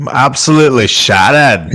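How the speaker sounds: put-on New Zealand accent. Asked by the others to say the line for them, New Zealand accent. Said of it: "I read that in the uh, New Zealand accent".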